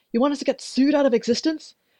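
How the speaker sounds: high yelled outburst. Narrator reads a woman in an office yelling again: yelled. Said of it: "She yelled again".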